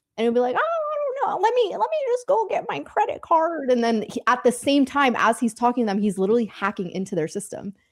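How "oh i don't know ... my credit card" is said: very high, put-on elderly lady voice. Describing a YouTube hacker fooling scammers, the speaker voices him: imitating an old lady voice. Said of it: "he'll pretend to be the old lady".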